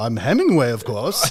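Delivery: put-on posh upper-class English accent. Retelling how a man answered who he was supposed to be, posh british accent. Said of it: "talking in like a like a posh British accent".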